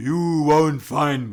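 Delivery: loud, booming voice, very slow and drawn out. Retelling a possessed woman held in a chair: imitating a deep booming voice. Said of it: "with this deep voice booming out saying".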